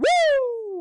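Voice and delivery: very high, overly loud, drawn-out celebratory whoop. Celebrating that the connection finally works: overly loud excited shout. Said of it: "That was that was overly loud".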